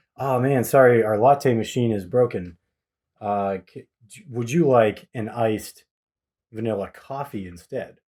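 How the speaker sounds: ordinary talk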